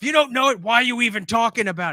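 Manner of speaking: furious, loud, high, angry screaming. Retelling a man screaming at someone who admitted not knowing enough, mock-angry screaming. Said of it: "he's screaming at you saying".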